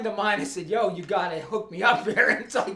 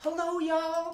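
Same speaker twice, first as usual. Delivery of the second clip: put-on typical Southern lady accent, pitched up; 8 semitones higher, 6 dB quieter than usual. Describing a cousin's wife by imitating a typical southern lady. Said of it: "Typical Southern lady with the".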